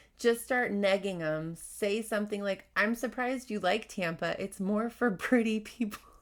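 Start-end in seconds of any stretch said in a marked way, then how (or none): none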